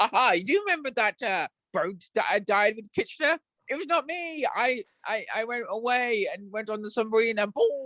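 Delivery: put-on British accent, slow. Speaking as someone who died on a boat with kitchener: put-on british accent. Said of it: "I'm going to say it in my British accent because I can't do Scottish".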